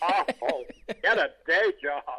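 slow, drawn-out delivery, each word dragged out. Retelling what a comedian said about the impression: Paul Lynde impression. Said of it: "he never liked my impression".

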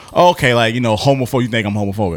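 normal talking voice

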